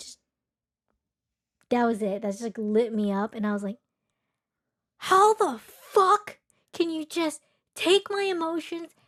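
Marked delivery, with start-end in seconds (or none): 5.0-8.9 mock top-of-the-lungs outraged yelling, high, drawn-out. Speaker recounts reacting when a man dismissed her emotions: retelling her own yelling. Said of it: "I'm yelling".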